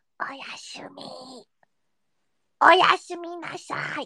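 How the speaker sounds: eerie, unsettling, creepy put-on voice. Signing off for the night to everyone, in a creepy voice. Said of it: "that was kind of a creepy voice".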